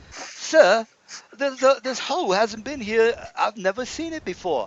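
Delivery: put-on squeaky, very high British kid voice. Narrating a Forgotten Realms game, voicing the kid character: British voice. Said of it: "British voice".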